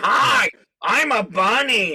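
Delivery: very high, loud, slow, drawn-out voice. Imitating the puppet Big Mean Carl in bunny ears: Big Mean Carl voice. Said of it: "he talks like this?".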